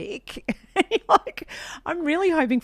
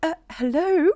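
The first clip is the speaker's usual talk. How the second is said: prim, pitched-up polite telephone voice; 8 semitones higher than usual. Imitating a mum answering the phone: imitating mum's phone voice. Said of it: "a phone voice".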